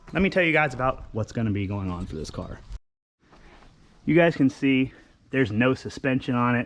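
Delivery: winded, breathless delivery. A speaker telling viewers about a car project, out of breath. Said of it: "i'm out of breath".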